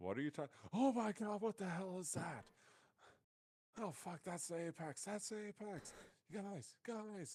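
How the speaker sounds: freaking out in panic. Voicing a character who sees a creature and loses his shit: panicked, losing his shit. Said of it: "he starts to, like, almost just, like, lose his shit".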